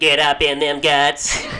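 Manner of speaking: very loud, very slow, booming otherworldly alien voice. Guessing aloud what an alien might sound like: put-on alien voice. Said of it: "I don't know what an alien sounds like".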